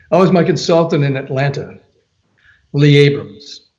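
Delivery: ordinary talk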